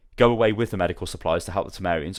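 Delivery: ordinary delivery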